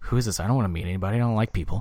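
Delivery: put-on muttering. Retelling what a man muttered on being introduced to someone: retelling a mutter under breath. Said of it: "under his breath".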